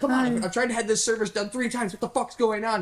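very high-pitched shouting. Describing a call to customer service, acting out yelling at the rep. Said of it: "feel super shitty for yelling at".

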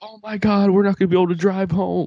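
panicky, loud blurted speech. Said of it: "She's like".

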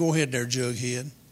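ordinary talk, nothing marked

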